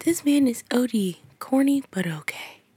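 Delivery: soft ASMR reading voice. Reading her messages aloud, in an ASMR voice. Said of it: "Let me read it in my ASMR voice".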